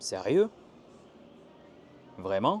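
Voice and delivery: loud, swooping, astonished rising tune on sérieux, vraiment. Showing the French intonation for astonishment: surprised, astonished intonation. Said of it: "l'étonnement en français, ça va être comme ça".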